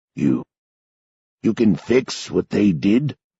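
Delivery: rough, gravelly voice with a hopeful note. Sanderson asks the narrator a question: hopeful, gravelly voice. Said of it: "a note of hope in his gravelly voice".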